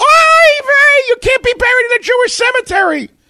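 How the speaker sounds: mock very high seagull screech, name drawn out. Retelling how an aunt reacted on seeing a tattoo: Aunt Minna's seagull scream. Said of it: "she screams like a seagull".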